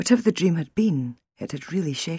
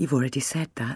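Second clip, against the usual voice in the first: ordinary delivery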